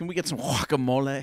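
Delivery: affected, put-on Los Angeles street accent. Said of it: "say it".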